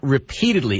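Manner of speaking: heavy stress on "repeatedly". Answering a Congressman about outreach to Mister Morales, stressing 'repeatedly'. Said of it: "I emphasize the word repeatedly".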